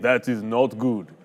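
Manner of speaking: clumsy, bad, put-on Russian accent. Imitating a movie character's constant line, the speaker uses a bad russian accent. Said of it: "I have a really bad uh, Russian accent, but I'll try it".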